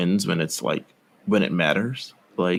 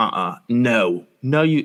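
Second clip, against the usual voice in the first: very slow, drawn-out put-on British accent; 3 semitones higher than usual. Retelling a wrestling promo, imitating Nikki Cross in a British accent. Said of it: "that was a British accent".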